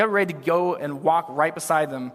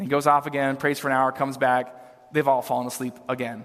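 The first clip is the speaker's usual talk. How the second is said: ordinary talk, nothing marked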